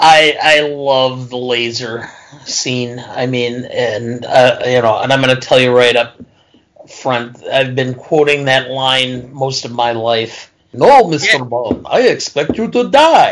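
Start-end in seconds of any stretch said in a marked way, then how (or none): 10.7-13.3 clumsy put-on German villain accent, pitched up. Quoting a movie line he's quoted most of his life, sounding like Count Chocula. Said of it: "you sound like Count Chocula every time".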